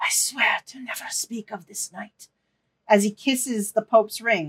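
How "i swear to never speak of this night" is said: very low, hushed, breathy, barely voiced whisper. A game narrator voices a character swearing an oath, speaking very low. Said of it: "you hear him say very low".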